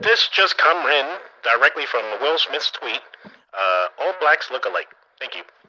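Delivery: 1920s AM radio announcer voice. Reading out a tweet as breaking news: 1920s AM radio announcer voice. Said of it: "my nineteen twenties A M radio voice".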